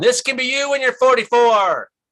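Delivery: very high, loud yelling call. Retelling yelling down the mountain to gasping young firefighters: retelling a yell down a mountain. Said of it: "I'm yelling down the mountain".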